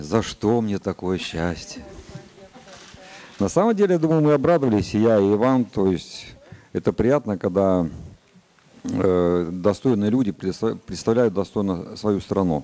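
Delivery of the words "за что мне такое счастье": slow, heavy-sighing woeful lament. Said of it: "только не с такой интонацией".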